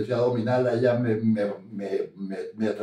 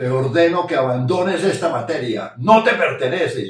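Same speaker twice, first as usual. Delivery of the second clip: shouting, higher and louder; 4 semitones higher, 6 dB louder than usual. Speaker re-enacts the command they gave her while holding her hands, retelling own shouting. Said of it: "yo le gritaba".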